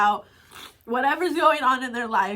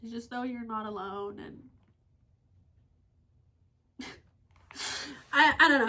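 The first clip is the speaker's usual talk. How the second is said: choked up, near tears, quieter; 6 dB quieter than usual. Talking about a hard day and feeling not alone, getting emotional, near tears. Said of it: "I just got really emotional out there all of a sudden".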